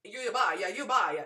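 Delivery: imitated Italian accent. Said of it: "in Italian".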